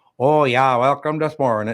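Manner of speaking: put-on Norwegian accent. Imagining how a guest would answer a greeting: imitating a norwegian accent. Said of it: "a Norwegian accent".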